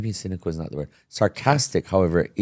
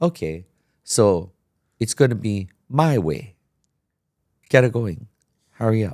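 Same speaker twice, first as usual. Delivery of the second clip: acted sarcastic tone. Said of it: "if you know how to be sarcastic like that".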